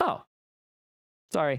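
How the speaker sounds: acted anger dropping instantly to lilting calm. Retelling how the angry friend suddenly apologized: imitating a sudden calm switch. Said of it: "just like a flip of a switch".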